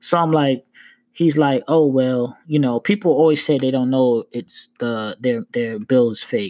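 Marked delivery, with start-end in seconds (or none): none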